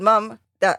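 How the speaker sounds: ordinary delivery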